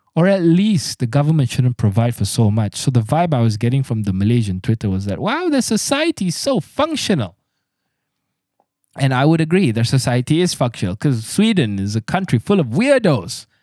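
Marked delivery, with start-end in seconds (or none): 5.2-7.3 sarcastic, mocking gush in a very high-pitched voice. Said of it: "I know I sound like I'm mocking them".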